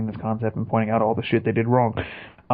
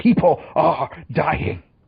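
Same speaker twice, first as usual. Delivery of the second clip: put-on elderly British voice, pitched higher; 6 semitones higher, 4 dB louder than usual. Imagining a movie character stepping in: Richard Attenborough impression. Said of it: "Attenborough to come out of the shadows and just be like".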